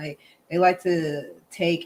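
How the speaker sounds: ordinary talk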